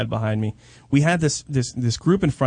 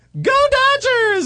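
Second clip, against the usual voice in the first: high-pitched, very high little puppet voice cheering; 5 dB louder than usual. Retelling how a man held up a puppet: imitating a puppeteer's cheer. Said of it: "like this".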